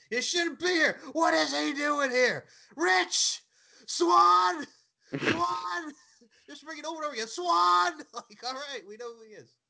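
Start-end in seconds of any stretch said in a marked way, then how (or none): 0.1-7.9 loud, slow animated yelling with "swan" dragged out. Recalling how animated Eric Young was when someone appeared, imitating Eric Young yelling. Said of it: "just yelling".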